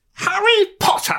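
high-pitched, loud audiobook narration voice, announced. Asked for a best impression and urged to go on, Stephen Fry doing Harry Potter audiobooks. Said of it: "I can do Stephen Fry doing Harry Potter audiobooks".

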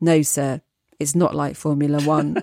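utterly emotionless, flat monotone deadpan. Retelling the car-machine seller answering without looking up, imitating an emotionless voice. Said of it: "in the most emotionless voice".

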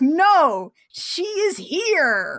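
high, slow, dramatic theatrical delivery. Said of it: "Jem's like".

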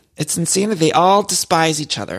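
ordinary talk

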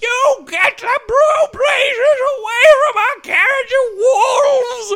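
very high, very loud, shrill screaming and hollering. A narrator voices a small chipmunk waving a staff at attacking wolves: screaming and hollering. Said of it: "screaming and hollering".

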